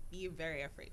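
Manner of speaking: ordinary delivery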